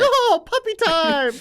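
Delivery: very high, loud commentator-style call. Imitating a commentator's excited call: imitating The King commentating. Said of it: "The King would do it. He'd be like".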